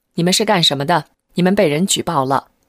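ordinary delivery

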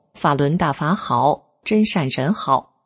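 plain

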